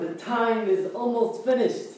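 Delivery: soft, happy, pleased voice. Called on by name in a voice exercise, the speaker repeats the practice line in a happy voice. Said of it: "try to say the time is finished with happiness".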